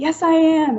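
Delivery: acted high yelling. Retelling an argument with a shaken woman, retelling own yelling. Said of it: "a lot of kind of yelling back and forth".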